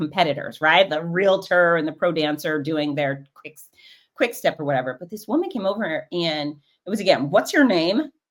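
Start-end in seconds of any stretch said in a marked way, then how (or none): 7.3-8.0 mock dismissive tone, higher pitch. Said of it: "in a really kind of dismissive way".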